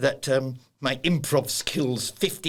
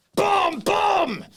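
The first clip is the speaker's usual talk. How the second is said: huge, throat-straining, very high booming shout; 6 dB louder than usual. Coaching public speaking, letting a big one go: gigantic booming shout. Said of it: "a gigantic boom boom. Oh, that hurt me larynx".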